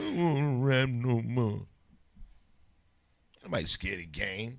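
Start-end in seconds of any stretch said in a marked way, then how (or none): 0.0-1.7 slow, loud, drawn-out crying wail. Imitating someone who cried on air: mock crying. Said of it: "You wanna cry on air".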